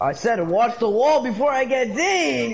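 yelling, loud shouting.

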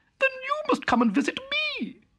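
crying out, very high-pitched. A mouse invites her country cousin to visit her, crying out. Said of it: "cried Town Mouse".

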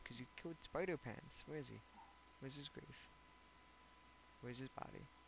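playacted, playfully sad grieving tone. Streamer after another player killed Spider Pants: mock sad. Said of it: "Why are you sad?".

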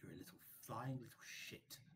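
hushed, whispered, in character. Playing a character pointing a cane at a creature: whispering in character. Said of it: "then whisper into it".

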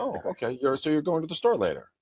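gentle, easygoing, calm, nice tone, lilting. Demonstrating how to answer a partner pushing your buttons, nice calm tone. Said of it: "do it with a nice, calm tone".

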